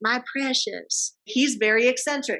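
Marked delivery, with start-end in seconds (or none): 0.0-1.1 strange, odd creature voice. Giving an example to students of a film character: Gollum voice. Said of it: "Y'all know the guy that goes like".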